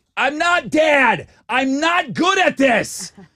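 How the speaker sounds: very high, loud, very slow, distraught, upset scream. Speaker retells his reaction after snapping both fridge parts, retelling his own scream. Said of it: "I'm screaming".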